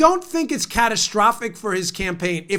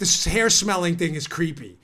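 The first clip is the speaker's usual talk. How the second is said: plain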